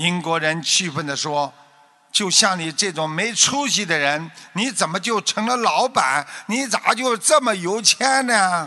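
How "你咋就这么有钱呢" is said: Henan dialect, pitched up. Telling a story of an Englishman questioning a boss, Henan dialect slipping out. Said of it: "河南话又出来了".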